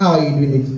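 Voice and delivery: ordinary talk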